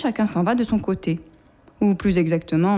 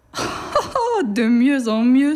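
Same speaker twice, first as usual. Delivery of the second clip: jeering, very slow and drawn-out mocking drawl; 4 semitones higher than usual. An antelope scoffs at a snail who claims he can be as fast: mocking. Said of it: "se moque l'antilope".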